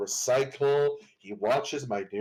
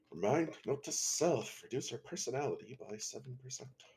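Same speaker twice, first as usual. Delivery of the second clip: very soft, hushed whisper under the breath; 10 dB quieter than usual. Voicing a character noting something to herself: whispering to herself. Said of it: "whispers to herself".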